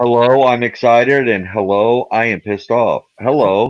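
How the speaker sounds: mock flat, unexcited delivery. Describing a midwestern fellow who never gets excited, imitating his flat delivery. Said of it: "Doesn't get excited about anything".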